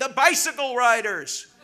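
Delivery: put-on old man voice hollering, high and loud. Telling a joke about a Hitler rally, voicing the old man in the back: retelling an old man's yell. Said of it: "an old man in the back yells out".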